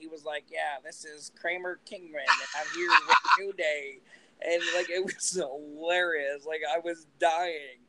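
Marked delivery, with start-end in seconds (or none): 0.5-4.0 nerdy, dweeby announcer-style voice. Retelling a New Day video, the speaker imitates Kofi talking like a nerd. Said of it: "And he was talking like a nerd".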